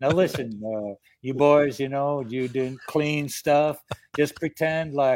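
put-on Southern man's accent through clenched, locked jaw. Retelling what the manager told the boys backstage, Southern guy through clenched teeth. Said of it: "Southern guy".

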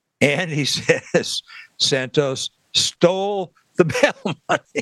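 slow, laughing delivery.

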